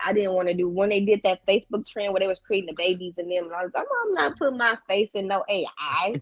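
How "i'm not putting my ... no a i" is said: plain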